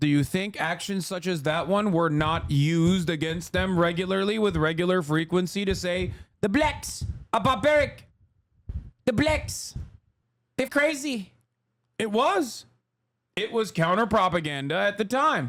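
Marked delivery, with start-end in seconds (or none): 6.4-11.3 bad put-on South African accent, pitched up. Acting out propaganda of the apartheid era in a bad south african accent. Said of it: "I can't do a South African accent".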